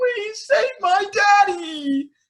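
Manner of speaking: acted, very high crying-out voice. Retelling an anime scene where Shirahoshi cries out: Shirahoshi crying out. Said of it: "Shirahoshi's crying out, like".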